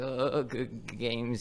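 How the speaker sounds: nervous, stuttering speech. Retelling what a shaking opponent said after the games: imitating nervous stuttering. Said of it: "He was, like, stuttering".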